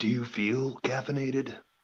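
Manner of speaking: cowboy film-star tough-guy voice, western gunslinger style. Joking about having just had coffee: Clint Eastwood voice. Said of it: "I feel like Clint Eastwood would be like".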